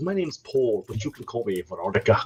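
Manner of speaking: best-attempt put-on Scottish accent. Showing a best scottish accent: put-on scottish accent. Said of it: "my best, uh, Scottish accent".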